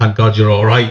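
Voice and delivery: plain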